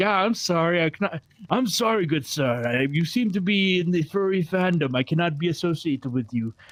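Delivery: put-on prim, overly proper, formal upper-crust voice. Acting out what someone with an accent said, more politely, in a put-on posh, formal voice. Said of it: "Why did you become so posh and formal?".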